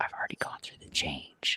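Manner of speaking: hushed whisper, barely voiced, very quiet. The speaker retells what they whispered to her: retelling a whisper. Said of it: "I was whispering to her".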